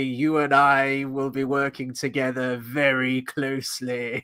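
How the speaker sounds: slow and deliberate delivery. Retelling own thought while watching, in Palpatine voice. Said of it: "I gave him Palpatine's voice".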